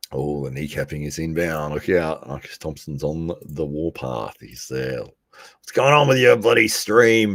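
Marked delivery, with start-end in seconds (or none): 5.0-7.4 very loud, high-pitched, gravelly, rough-edged voice. Imitating someone on the warpath asking about the stream: Marcus Thompson impression. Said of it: "that's my impression of him".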